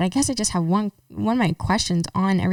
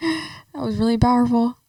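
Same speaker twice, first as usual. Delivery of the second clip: choked with tears, tearful and pitched-up; 5 semitones higher than usual. A host reacts to a guest's long answer while crying. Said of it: "we're crying over here".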